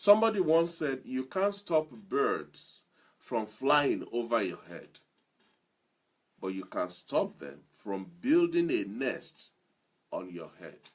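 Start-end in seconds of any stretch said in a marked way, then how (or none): none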